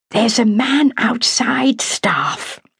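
slow, high, confidential stage whisper. Brown appears at the staff nurse's elbow on the ward to whisper. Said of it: "to whisper".

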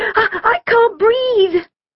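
very high, panicked, yelped cry. Kim, swaying side to side, speaks to Amber; yelping. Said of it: "she yelped".

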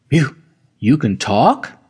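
ordinary delivery

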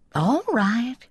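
soothing voice. Narrator reading G-Dub settling down the boy Charlie, soothing. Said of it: "he soothed".

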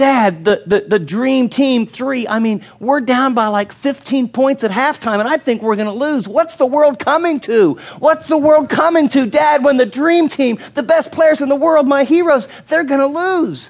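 put-on high, desperate wailing child voice.

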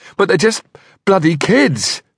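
very high, desperate, despairing protest. Threatened with harm to children, a man answers the man opposite, desperate. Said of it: "he said desperately".

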